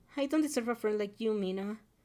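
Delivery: ordinary delivery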